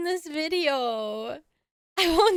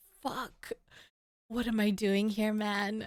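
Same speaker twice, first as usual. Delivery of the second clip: mock nervous panic, lower and quieter; 6 semitones lower, 6 dB quieter than usual. Imitating how the nervous guy on screen reacts: imitating a nervous man. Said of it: "Look at his face".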